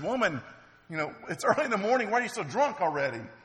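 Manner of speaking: high, quick, shaming reproachful tone. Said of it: "he sort of shames her".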